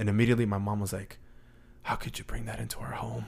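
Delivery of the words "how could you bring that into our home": secretive, hushed, very quiet whisper. Retelling what their mom said at night: imitating mom's whisper. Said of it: "Why are you whispering?".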